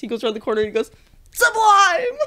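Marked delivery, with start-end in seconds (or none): 1.3-2.2 high, loud, belted triumphant yell. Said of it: "expecting him to yell something like".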